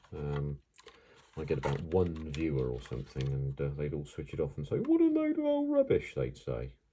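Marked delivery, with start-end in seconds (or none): 4.8-6.1 very high, silly put-on falsetto. Imagining viewers switching it off and complaining, in a silly falsetto voice. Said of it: "that rather silly falsetto voice I've just used".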